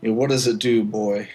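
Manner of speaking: loud, patronizing, condescending fatherly voice talking down. Playing the father asking a boy about the bauble he picked up, condescending father voice. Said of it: "sort of in a condescending voice".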